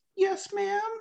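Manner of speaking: put-on very high, dutiful, meek kid voice. Retelling a video where the kid answers his mom: imitating a kid answering mom. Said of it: "And then the mom comes and he's like".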